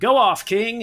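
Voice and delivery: very high, animated cartoon character voice. Speaker retells what he said at the craft table, in a Sonic voice. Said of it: "in his Sonic voice, he was like".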